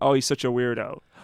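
ordinary talk, nothing marked

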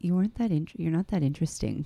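imitated whisper. Retelling what Rumi said after seeing the show: imitating Rumi whispering. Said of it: "kinda whispered to me".

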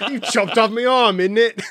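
put-on Cockney accent, loud and high. Describing how game characters talk after losing an arm, cockney accent. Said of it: "they'll like speak in a Cockney accent".

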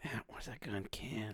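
barely-there, soft, breathy whisper. Retelling what he whispered after a kiss: retelling a whisper. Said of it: "And then he whispered".

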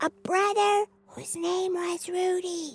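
whispering. Repeating a rhyme line after the leader before nap time: whisper. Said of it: "repeat after me in a whisper".

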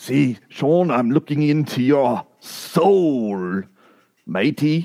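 playful put-on pirate voice and accent. Teasing a fellow host on the show's 200th episode, in a pirate voice. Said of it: "Is he a pirate now?".

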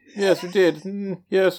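very high, put-on, affected posh voice. Answering another speaker about growing up differently, in a put-on posh voice. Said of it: "That was my posh voice".

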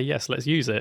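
ordinary talk

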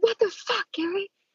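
very high-pitched, enraged, furious shriek. Retelling shoving a man and confronting him about her brother, retelling angry yelling. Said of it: "walk up to him and I shove him".

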